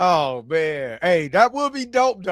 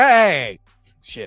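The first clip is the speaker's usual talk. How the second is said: put-on loud, exclaiming old-man voice; 5 dB louder than usual. Retelling his reaction to his daughter while watching an episode, old man voice. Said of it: "so it sounded like an old man".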